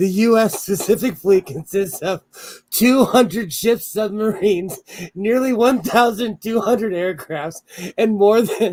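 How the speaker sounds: speech breaking up with laughter throughout. Reading out fleet numbers: laughing while talking. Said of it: "I can't say that without laughing".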